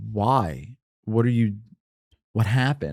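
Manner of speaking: put-on grave, earnest tone, low. Retelling an older janitor's reaction on hearing he was leaving, imitating a serious tone. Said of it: "he got so serious".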